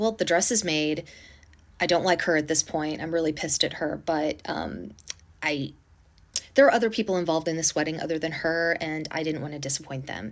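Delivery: ordinary talk, nothing marked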